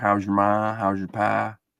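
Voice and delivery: put-on Southern country accent. Speaker works on getting an accent down, in a put-on southern accent. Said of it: "Get my uh, accent down too".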